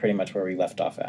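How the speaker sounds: plain reading voice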